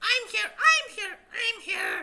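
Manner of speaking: very high, very loud, shrill, booming goblin screech. A game master voices goblins the players hear as they move in, goblin voices. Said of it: "three goblin voices like".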